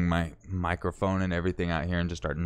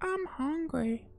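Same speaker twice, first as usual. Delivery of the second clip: botched, very high-pitched, soft put-on female voice; 5 dB quieter than usual. Speaker recreates how he voiced the wife's line in his video, attempted female voice. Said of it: "Like I was trying to do a female voice".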